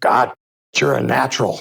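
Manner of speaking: loud, slow, rough, drawn-out voice. Retelling the boss's praise after a first night on commentary: imitating the boss's voice. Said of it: "that's a good impression of him with his voice".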